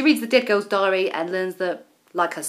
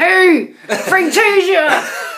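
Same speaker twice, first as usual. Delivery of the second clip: very high, shrill, loud voice; 10 semitones higher, 9 dB louder than usual. Imitating how Andy would react in the room: Andy impression. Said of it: "he'd say".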